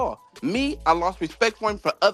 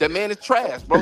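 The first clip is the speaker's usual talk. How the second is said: normal talking voice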